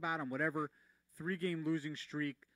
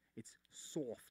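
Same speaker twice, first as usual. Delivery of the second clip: hushed, breathy New Jersey accent, soft said "sawft"; 4 semitones lower, 9 dB quieter than usual. Showing how soft is said back home: New Jersey accent. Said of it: "that's how we say it in Jersey".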